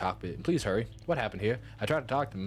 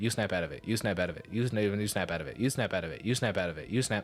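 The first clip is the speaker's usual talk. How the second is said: ordinary talk, nothing marked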